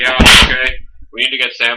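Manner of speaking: loud, dead flat deadpan, no inflection. Comparing the characters, the speaker quotes Egon's reply: deadpan Egon impression. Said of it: "the completely deadpan straight guy".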